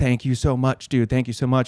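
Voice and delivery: put-on tearful, crying voice. Retelling an old man's thanks for finding his dog: imitating someone crying.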